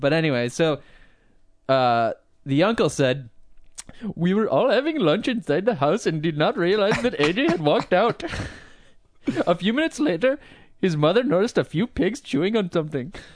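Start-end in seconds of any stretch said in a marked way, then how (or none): 4.1-13.1 high-pitched, put-on voice. Reading out a relative's quote from a news story: Apu voice. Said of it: "Love the Apu voice".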